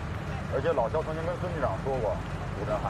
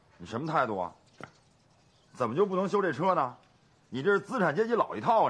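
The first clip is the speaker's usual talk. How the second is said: heated, angry berating with pitch climbing; 3 semitones higher than usual. In a sketch, someone berates a person who won't fix the car, angry scolding. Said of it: "别生气嘛".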